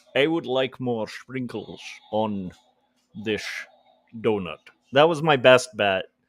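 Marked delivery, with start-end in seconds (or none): 0.1-4.5 put-on Scottish accent, leaning on the S sounds. Speaker tries Sean Connery ordering sprinkles on a donut: Sean Connery Scottish accent. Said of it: "Sean Connery ordering sprinkles".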